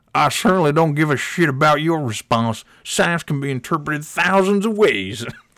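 put-on Southern accent. Reading out a commenter's reply, imitating a Southern guy. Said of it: "he's a Southern guy, so I'm, I'm sure he sounds like this".

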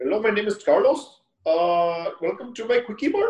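high, put-on Indian accent drifting toward Mexican. Showing the listeners an attempt at an accent, attempted Indian accent. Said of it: "That sounds like Mexican to me".

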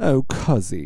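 purring, cat-like voice. Describing a character sashaying into the room, imitating her purr. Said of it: "she purrs and she goes".

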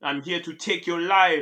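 put-on Jamaican accent. Retelling what the Grim Reaper said to the speaker: Grim Reaper with Jamaican accent. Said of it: "Why the fuck does the Grim Reaper have a Jamaican accent?".

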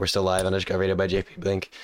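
ordinary talk

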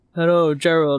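scary, creepy computer text-to-speech voice. Imagining setting up text-to-speech to greet gerald: terrifying computer voice. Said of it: "some terrifying, like, computer".

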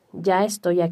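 plain

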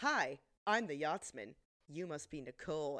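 oily, smug, self-assured tone. Retelling a tv scene where a character introduces himself, imitating a smug tone. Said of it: "And he's so fucking smug".

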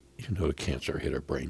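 ordinary talk

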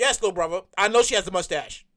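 mock deadpan, very low, flat, level monotone. Retelling what a woman said back to him, mock deadpan delivery.

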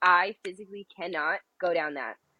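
ordinary talk

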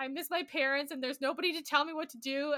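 put-on crying voice. Speaker recalls being sixteen in Paris with friends, retelling own crying. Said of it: "I'm just like crying".

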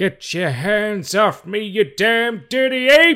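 shrill, booming, drawn-out, high belting, odd rhythm. Showing how the movie star really talks: Charlton Heston impression. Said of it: "He talks like this".

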